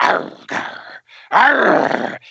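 growling voice. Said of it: "Diesel growling".

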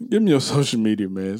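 words breaking up with laughs throughout. Asking another speaker for their social media handles, laughing while talking. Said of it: "so I can stop laughing".

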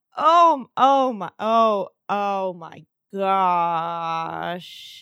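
really shocked, stunned gasp. Playing a character who reacts to a rival's tower: really shocked gasp. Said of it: "I make, like, a really shocked gasp".

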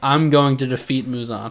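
plain

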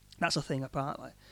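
ordinary delivery

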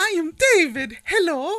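very high, slow fake Italian accent. Retrying an accent after being asked about it, put-on Italian accent. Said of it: "Oh, yeah, Italian. Let me try that again".

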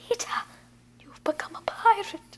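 hushed, breathy, soft little character voice. Retelling her line to grown-up Peter, in a McGonagall voice. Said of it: "she says it in a little McGonagall way".

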